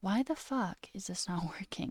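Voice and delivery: composed, calmer voice with the heat taken out. Restating a curse-filled question, this time said more calmly. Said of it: "let me say that more calmly".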